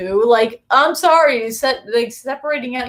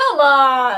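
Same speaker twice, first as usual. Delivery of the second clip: exasperated, slow, drawn-out grumble. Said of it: "Like, I was like".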